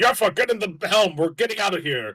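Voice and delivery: high, loud yelled shouts. Scar gets onto the ship's bridge and calls to Yaffa at the helm, yelling orders. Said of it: "he starts yelling like".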